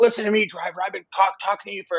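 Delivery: mock stern official voice. Telling a story, the speaker quotes a customs agent in his face: imitating an angry customs agent. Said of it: "this like customs agent is right here in my face".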